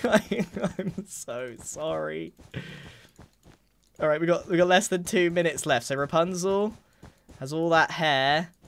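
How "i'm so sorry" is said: laughing through the words, quieter, slower. Apologizing over and over while drawing Rapunzel against the timer, laughing apology.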